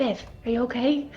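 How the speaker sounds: breathy, voiceless half-whisper. Casting a message spell to check on viv: half-whispering. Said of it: "casts message and whispers".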